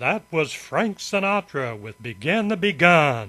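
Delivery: put-on on-air radio announcer voice. Retelling how a record ended, the speaker announces it on air in a radio announcer voice. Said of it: "I put on my radio voice".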